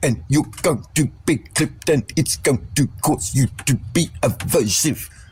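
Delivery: curt military-style delivery. Demonstrating an off-putting way of talking during a chat about voices: clipped militaristic voice. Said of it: "talk like this, ... It's militaristic".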